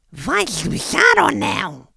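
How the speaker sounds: put-on very thin, high-pitched voice. Retelling a meeting, the speaker quotes a young punk's question: very thin high voice. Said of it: "com uma voz finíssima".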